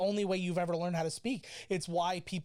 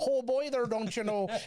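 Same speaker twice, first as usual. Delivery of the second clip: put-on Minnesota accent, pitched up; 5 semitones higher, 4 dB louder than usual. Explaining how Louisianans hear an outsider, in a put-on Minnesota accent. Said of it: "somebody from Minnesota come down and go".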